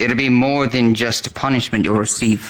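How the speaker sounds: loud, stern, threatening tone.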